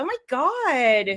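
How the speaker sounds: put-on Valley girl accent with God drawn out. Speaker jokes about going back to their Valley roots, Valley girl accent. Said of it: "go back to my Valley roots".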